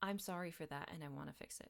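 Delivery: normal talking voice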